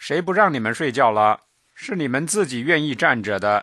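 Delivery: plain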